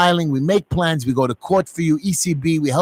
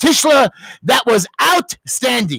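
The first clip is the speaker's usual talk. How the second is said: mock, high, long, drawn-out swooping scream; 8 semitones higher, 4 dB louder than usual. A rabbi has grabbed a student who snuck into class late; the student retells it, imitating someone screaming. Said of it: "he screamed".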